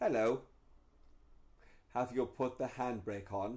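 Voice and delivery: automated in-car recorded woman's voice prompt. Explaining what the car says when you park, imitating a car's woman's voice. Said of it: "a woman's voice comes on and goes".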